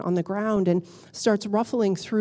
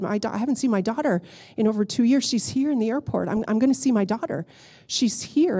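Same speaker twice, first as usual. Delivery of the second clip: usual speaking voice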